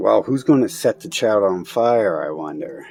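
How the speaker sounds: ordinary delivery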